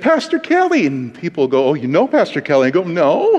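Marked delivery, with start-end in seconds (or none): 0.0-0.9 jittery, nervous, very high-pitched voice. Retelling walking in and greeting a pastor from videos, retelling a nervous greeting. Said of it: "I nervously said".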